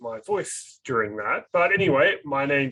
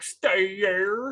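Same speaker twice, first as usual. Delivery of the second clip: put-on Oklahoma twang at a higher pitch; 6 semitones higher than usual. A parent imitates how the children used to talk, imitating Oklahoma twang. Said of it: "nice Oklahoman twang where they'd be like".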